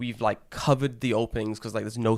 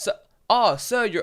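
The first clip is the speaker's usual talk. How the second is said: put-on old Japanese man voice, broken English, much higher; 10 semitones higher, 5 dB louder than usual. Joking about a long video you must watch, speaker does old japanese man, bad english. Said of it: "the oldest Japanese man ... in his bad English".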